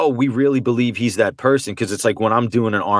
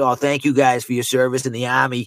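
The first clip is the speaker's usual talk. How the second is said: broad Boston accent, laid on thick; 4 semitones higher than usual. Showing how commercials would sound with a boston accent: thick boston accent. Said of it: "talking like this".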